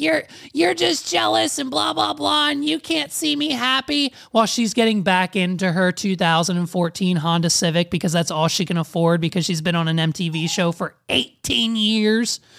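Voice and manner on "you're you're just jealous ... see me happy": put-on, high, rough, rasping yell. Retelling an MTV show scene of yelling at him: imitating Courtney yelling. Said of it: "Courtney's yelling at him, like".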